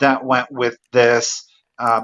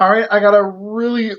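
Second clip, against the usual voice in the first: very high-pitched words spoken through a yawn; 9 semitones higher than usual. Presenting a surprise item to viewers, speaking while yawning. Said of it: "Sorry, I'm yawning".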